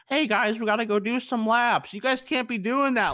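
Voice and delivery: nerdy, high dorky voice. Retelling how a teacher told the class to run laps: imitating a teacher's dorky voice. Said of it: "a really dorky voice".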